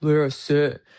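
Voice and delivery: deep, low, commanding voice from the chest. Showing how to say the command so someone will listen: deep voice from the chest. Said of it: "you got to make it deep enough. Say it with your chest".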